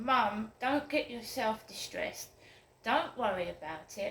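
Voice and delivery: plain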